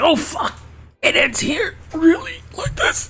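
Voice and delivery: very high, drawn-out choked crying wail. Retelling what she said while choking: imitating someone choking and crying. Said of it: "she's choking and crying".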